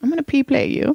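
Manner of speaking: high, put-on German accent. Joking about pee play with the other speaker: put-on german accent. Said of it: "I have to be German when I say that".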